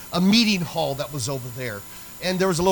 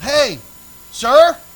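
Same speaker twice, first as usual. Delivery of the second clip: loud, high yelling. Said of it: "And I yelled".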